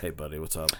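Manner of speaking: energy drained out, very low, soft and hushed. Greeting Mister Curtis, the way they always do: low-energy voice. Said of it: "I lose energy in my voice when I have to talk to Mister Curtis".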